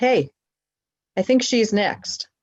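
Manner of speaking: put-on New York accent, called out. Retelling speaking up for an elderly woman being ignored in line, new york accent. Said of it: "in my very good New York voice".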